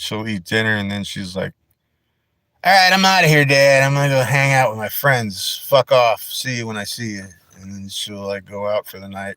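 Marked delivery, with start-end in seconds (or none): 2.6-7.2 put-on, dismissive teenage girl voice. Voicing a pet cat as a teenage daughter heading out: put-on teenage daughter voice. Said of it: "She's like a little teenage daughter".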